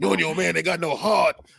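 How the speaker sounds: loud, rough, taunting voice. Joking about visiting the Rocky statue: Clubber Lang impression. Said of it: "I would start doing, uh, Clubber Lang's".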